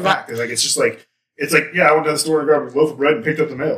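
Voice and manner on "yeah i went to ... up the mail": breezy, matter-of-fact, nonchalant casual tone. Imitating a killer describing the crime to an investigator: imitating a nonchalant tone. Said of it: "it was that nonchalant".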